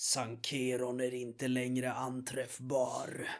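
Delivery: parched, dry, cracking monotone voice. Running a tabletop adventure, voicing a creature answering the players: dry, cracked voice. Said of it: "säger med torr och sprucken röst".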